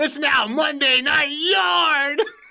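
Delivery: mock very slow, high, loud yell, Yard held long. Retelling how Michael Cole yelled a new catchphrase: imitating Michael Cole yelling. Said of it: "he just yelled it".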